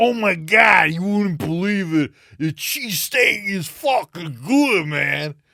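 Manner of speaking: too-big, high, overblown New York accent. Talking about favourite voices, demonstrating an extreme New York voice: overblown New York accent. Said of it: "extreme New York voice".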